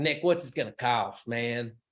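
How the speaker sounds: put-on speaking with Southern accent. Retelling what a client said at dinner, imitating a Southern accent. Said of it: "with an accent".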